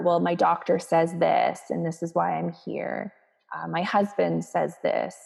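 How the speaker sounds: ordinary delivery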